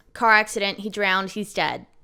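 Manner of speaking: loud, rough, raspy voice.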